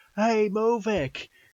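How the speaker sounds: calling out loudly. Voicing a character calling up from the water: shouting up from below. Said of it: "and he shouts back up".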